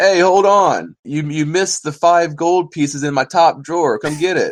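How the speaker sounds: high, very loud shout. Telling a story where a hermit calls to a departing thief, retelling a shout. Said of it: "the hermit shouts".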